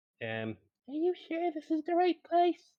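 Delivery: high squeaky character voice. In a role-play, Batleona answers after getting pats on the head: squeaky Batleona voice. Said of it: "She squeaks and uh, says".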